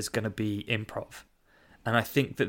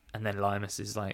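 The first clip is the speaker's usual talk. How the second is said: ordinary talk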